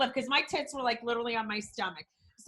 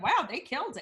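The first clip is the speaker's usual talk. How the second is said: ordinary delivery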